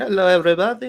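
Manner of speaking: put-on very high, squeaky comic Italian accent. Voicing the cricket as it greets everybody, Asshole the Cricket voice. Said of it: "He's Italian or something?".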